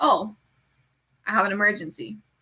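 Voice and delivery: dry, flat, unbothered deadpan delivery. Speaker acts out reporting a cut finger while cooking, acting out a deadpan reaction. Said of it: "I'm just gonna be like deadpan".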